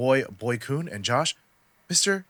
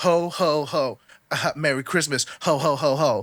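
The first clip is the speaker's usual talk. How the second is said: cheesy, corny, very slow, dragged-out delivery. Retelling a corny one-liner someone said while walking past: imitating a gym guy's corny one-liner. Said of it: "he was like".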